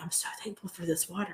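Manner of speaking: very soft, whispered voice.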